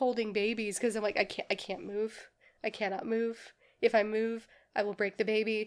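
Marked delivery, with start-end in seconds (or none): none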